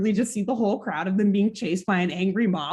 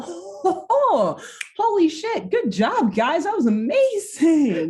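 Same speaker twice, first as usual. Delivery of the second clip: put-on high old man voice, talking while cracking up; 9 semitones higher than usual. Retelling how Grandpa reacts to the kids' alien prank, mock-laughing as Grandpa. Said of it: "Grandpa just starts laughing like".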